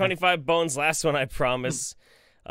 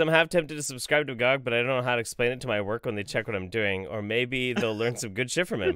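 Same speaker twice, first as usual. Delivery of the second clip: plain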